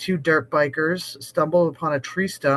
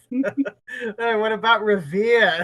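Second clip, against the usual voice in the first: put-on Boston accent, pitched up; 6 semitones higher than usual. Recreating the Boston Accent skit for listeners, in a mock Boston accent. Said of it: "it's a skit called Boston Accent".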